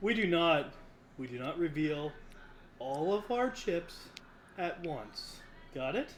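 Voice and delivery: very soft, hushed, confidential tone. Leaning in close to another player to tell him something, speaking very softly. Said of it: "lean in and very softly tell him".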